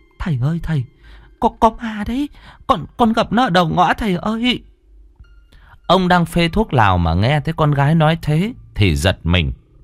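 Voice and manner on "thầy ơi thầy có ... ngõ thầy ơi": high, stammering blurt, tripping over every word. A mother arriving home calls out to her father: stammering. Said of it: "thì lắp bắp".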